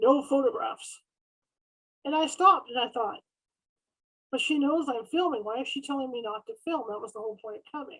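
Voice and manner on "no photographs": put-on deep voice. Retelling a psychic turning around on the stairs during filming, imitating a real deep voice. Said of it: "in a real deep voice".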